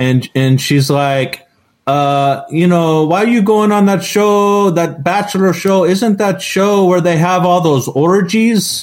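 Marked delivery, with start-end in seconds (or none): 3.1-8.8 higher-pitched, put-on Ukrainian accent. Retelling what a woman's immigrant mother says to her: Ukrainian kind of accent. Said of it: "Ukrainian kind of accent".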